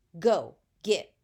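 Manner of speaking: mock, very loud, menacing, threatening bark. Reading a story where a girl orders a child away: threatening voice, as if about to hit. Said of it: "her voice changed as if she was gonna hit me".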